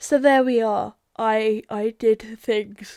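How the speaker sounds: speaking through yawns. Recapping to listeners what they did in the game, yawning while talking. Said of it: "apologies for all the yawning".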